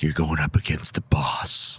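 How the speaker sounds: hushed, low, unvoiced whisper.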